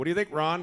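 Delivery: facetious, mocking tone, high and loud.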